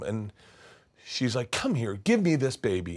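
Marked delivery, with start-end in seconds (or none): none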